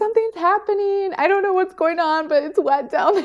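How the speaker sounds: mock screaming, pitched very high. Retelling the moment the water broke, retelling own scream. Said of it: "I think I just started screaming".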